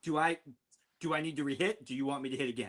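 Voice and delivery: dead-serious, polite, sincere and earnest tone. Retelling a friend's question to the golf starter: imitating a sincere question. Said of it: "delivered it in a one hundred percent sincere matter".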